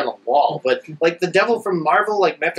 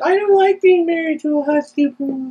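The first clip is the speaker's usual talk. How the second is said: put-on whiny superhero voice, higher; 11 semitones higher than usual. Joking about two decades of Peter Parker: imitating Peter Parker whining. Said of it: "Peter Parker whining".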